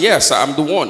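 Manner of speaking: very forward, bold, self-assured tone. Retelling answering the bride's father: retelling a very forward answer. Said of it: "I was now being very forward".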